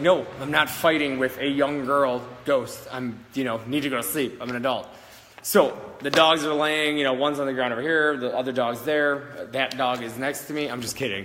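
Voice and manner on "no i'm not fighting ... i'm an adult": ordinary delivery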